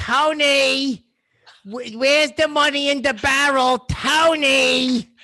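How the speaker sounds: high-pitched mob wife voice, drawn-out name. Trading Sopranos impressions, doing a Carmela Soprano impression. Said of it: "That is a spot on Carmela Soprano".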